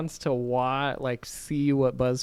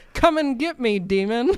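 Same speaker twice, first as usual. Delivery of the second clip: very high, goading, taunting yell; 10 semitones higher than usual. Retelling a clip of Shane on the basement floor calling to a demon, retelling a man's yell. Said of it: "he just yells like".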